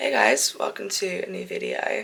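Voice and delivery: freshly woken morning voice. Greeting viewers at the start of a new video, in a just-woke-up voice. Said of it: "sorry for my voice right now. I literally just woke up".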